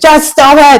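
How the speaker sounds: shrill, very loud yelling outburst. Retelling a video where a man tells a client to stop: imitating a man yelling louder. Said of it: "He's getting louder and louder and louder".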